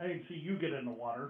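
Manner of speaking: snarky, snide little comeback. A player voices their character answering back with a snide comment. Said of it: "make a little snide comment back".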